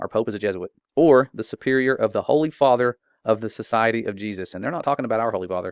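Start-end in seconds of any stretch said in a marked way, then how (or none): none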